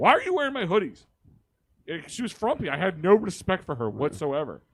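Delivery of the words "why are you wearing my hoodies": loud, high-pitched, scolding yell. Retelling coming home and finding her in his hoodies: imitating own yelling. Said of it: "I come home and I yell at her".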